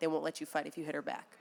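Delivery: put-on whispering. Retelling what a security guard said during a fight: imitating someone whispering. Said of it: "he whispered in my ear".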